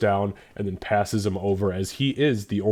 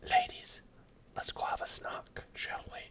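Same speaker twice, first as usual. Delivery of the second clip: soft whisper; 13 dB quieter than usual. Voicing a character who slips behind the pillars to the maids, whispering in Dwarven. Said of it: "he whispers to them in Dwarven".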